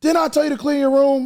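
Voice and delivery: put-on stern yell, very high and loud. A parent replaying what they say to her about chores: retelling own yell. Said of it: "And then once I yell".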